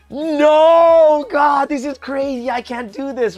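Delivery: acted panicked pleading, very slow, long drawn-out "no". Speaker retells their reaction to being placed in the medical department, retelling freaking out. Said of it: "And I was freaking out like".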